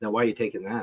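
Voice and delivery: put-on patronizing, condescending, talking-down tone. Retelling a question from the passenger about a GPS exit: imitating a condescending question. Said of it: "she will do the condescending stuff".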